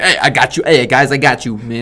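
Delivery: put-on thick Brooklyn accent. Comparing someone's voice to Spider-Man in Homecoming, doing Spider-Man's thick Brooklyn accent. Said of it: "a really thick Brooklyn accent".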